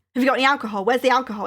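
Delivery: put-on aggressive tone. Retelling a man searching the speaker's trolley for alcohol: imitating an aggressive man. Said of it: "a really aggressive guy".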